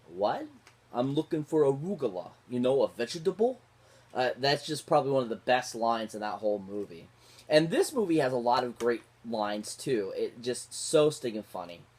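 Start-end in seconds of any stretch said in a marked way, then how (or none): 0.9-3.6 put-on heavy New York mobster accent. Speaker quoting a favorite movie line: Steve Martin's New York mobster accent. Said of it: "this mobster guy that's like New York".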